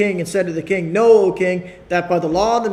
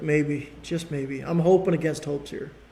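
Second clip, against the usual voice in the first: mock-lamenting, lower and quieter; 4 semitones lower, 8 dB quieter than usual. Speaker acting out the king in the Daniel story, imitating a lamenting king. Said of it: "a lamenting voice".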